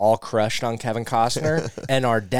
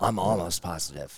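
put-on dramatic delivery, low and quiet; 5 semitones lower, 7 dB quieter than usual. Chatting with others, the speaker drops into a slightly lower voice. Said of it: "Your voice got a little lower there".

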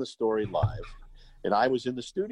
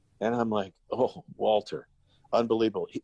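ordinary delivery

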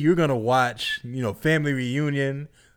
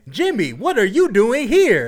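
mock stiff, loud, robotic, overacted, higher and louder; 9 semitones higher, 6 dB louder than usual. Showing how actors in the plays deliver lines: imitating loud robotic overacting. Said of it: "loud and robotic".

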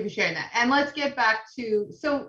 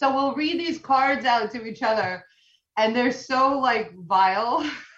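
ordinary delivery

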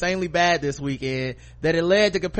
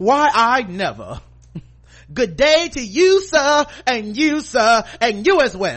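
loud, high, swooping, huffy, lofty affronted voice; 6 semitones higher, 5 dB louder than usual. Imagining a commercial shoot where she is asked to fry chicken: Cheryl's voice as imagined. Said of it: "I don't know why she talks like that in my head".

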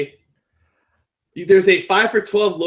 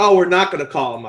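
normal talking voice

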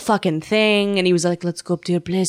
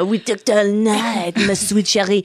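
put-on cartoonish French accent; 2 semitones higher than usual. Retelling a late-night talk with a man about the train, Pepe Le Pew voice. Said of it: "that was Pepe Le Pew".

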